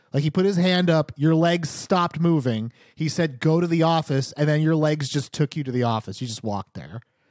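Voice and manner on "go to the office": plain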